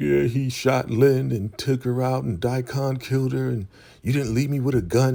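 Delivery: mock sobbing, high crying voice through tears. Retelling what a captive said in the punishment trailer: imitating someone crying. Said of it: "Brian all crying like".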